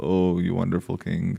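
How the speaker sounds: normal talking voice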